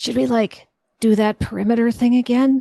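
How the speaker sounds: whispering. Speaking in character while people fear the dragons nearby: whisper. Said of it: "and I'm gonna whisper".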